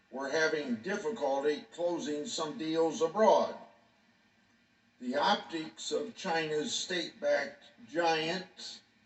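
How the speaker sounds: ordinary delivery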